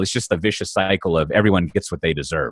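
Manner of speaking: usual speaking voice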